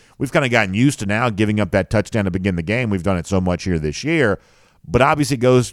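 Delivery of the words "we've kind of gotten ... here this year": ordinary delivery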